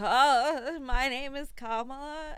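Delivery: very slow, wavering, quivering voice with drawn-out oh. Telling others how she sounds while saying you don't miss her, imitating Kamala Harris's quivering voice. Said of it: "her voice quivers".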